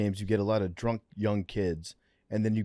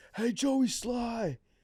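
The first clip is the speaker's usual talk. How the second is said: mock drunken screaming, higher pitched; 14 semitones higher than usual. Retelling what a heckling fan kept shouting at the kicker: imitating a drunk fan screaming. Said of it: "He kept screaming".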